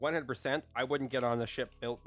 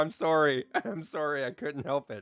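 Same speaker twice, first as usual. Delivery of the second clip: ordinary talk, nothing marked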